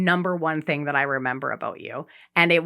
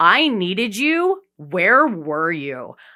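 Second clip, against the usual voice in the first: put-on, very slow, drawn-out, pissed-off attitude; 3 semitones higher, 4 dB louder than usual. Retelling calling back someone who hadn't answered for hours: retelling giving attitude. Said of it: "I just gave you attitude immediately".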